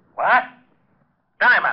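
high-pitched angry yelling outburst. Passing on a phone message, calling out for Diamond across the office: yelling. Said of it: "You better watch that yelling".

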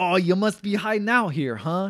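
put-on high, loud New York accent. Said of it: "He says".

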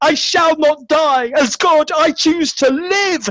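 screamed out, very high and piercing. He answers the booming box, screaming. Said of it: "he screamed".

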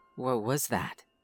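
hushed whispering voice. Reading a story, a climber asks about a noise: whispering. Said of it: "I whispered".

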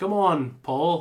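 loud, belted, bad Liverpool accent. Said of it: "I can only do like a Beatles voice".

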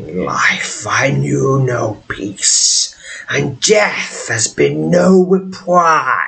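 waspy, hissing, ghoulish spirit voice. A narrator voices a phantasmal entity issuing a warning, in a waspy, ghoulish voice. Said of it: "In a waspy, ghoulish voice".

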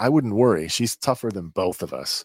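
ordinary talk

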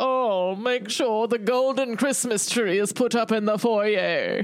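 upper-class rich voice. Two co-hosts riff in character about owning a yacht: rich person voice. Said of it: "I've been doing this rich person voice".

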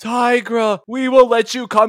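slightly robotic, flat, high, subdued delivery. Recapping a cartoon episode and mocking the voice actress's delivery: robotic Cheetara impression. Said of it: "she gets a little robotic".

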